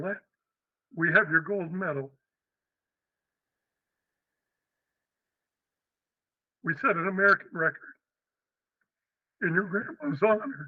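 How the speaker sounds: emotional, choked up, voice breaking. Retelling teammates' call after a funeral, getting emotional: emotional, voice breaking. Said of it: "I was very emotional, as I am right now".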